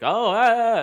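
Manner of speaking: very high, loud, fake excited youtuber voice. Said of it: "all excited, fake".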